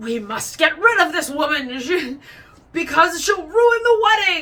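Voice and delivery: very loud, swooping, mustache-twirling cartoon villain voice. Mocking people who want a woman kept from a wedding, use a cartoon villain voice. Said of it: "they sound like a cartoon character".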